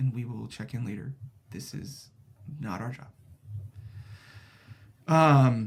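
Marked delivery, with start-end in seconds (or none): 0.0-3.1 character whisper, quieter. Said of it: "she whispers in your ear and says".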